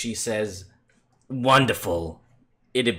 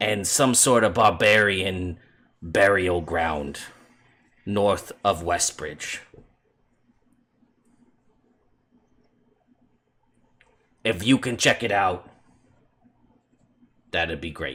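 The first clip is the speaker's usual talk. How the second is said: heavy chain smoker's voice; 3 semitones lower than usual. Describing a familiar woman's voice heard in your head, Lady Stormbanner smoker's voice. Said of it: "voice sounds as though she smokes like thirty packs of cigarettes a day".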